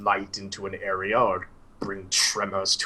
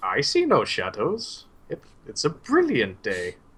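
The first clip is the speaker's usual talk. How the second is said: put-on slow, swooping, puzzled, befuddled old man voice; 4 semitones higher than usual. Voicing an old man looking around bewilderedly: bewildered old man voice. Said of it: "just kinda bewilderedly".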